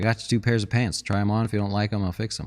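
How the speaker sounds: ordinary delivery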